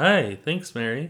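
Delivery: serious radio-host voice. Greeting a co-host on a show: serious NPR-style voice. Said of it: "so serious with your, like, "Thanks, Mary," like this is N P R".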